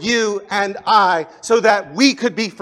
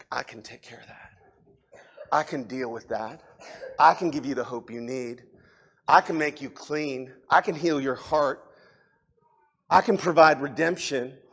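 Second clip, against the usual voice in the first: put-on whisper, much lower and quieter; 7 semitones lower, 10 dB quieter than usual. Describing feeling beyond help, then imitating Jesus whispering. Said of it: "Jesus is just whispering".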